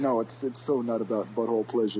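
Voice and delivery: mock flat deadpan. Acting out how Andy answered, retelling it in put-on deadpan. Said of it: "so deadpan".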